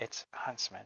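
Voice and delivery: hushed whisper. Playing a character answering a healer, naming a patient: whispering. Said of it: "and then I whisper".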